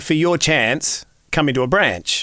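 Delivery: eastern Australian accent, national voiceover read. A voiceover artist demonstrating an eastern states read, eastern Australian pronunciation. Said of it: "if I'm voicing for eastern states or national".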